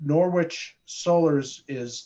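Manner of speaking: very slow, careful speech.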